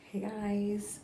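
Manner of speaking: whispering. Greeting the audience at the start of an update, whispering. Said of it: "I don't know why I'm whispering".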